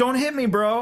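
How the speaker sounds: very high, wimpy, scared pleading tone. Speaker retelling being confronted by a man while live streaming, retelling a scared plea. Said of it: "I sound like such a wuss on it".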